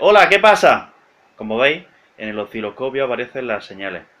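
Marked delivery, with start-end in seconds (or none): 0.0-0.9 very loud, very high-pitched call. Showing an oscilloscope picking up the voice: a bit louder. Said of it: "si yo hablo un poco más fuerte".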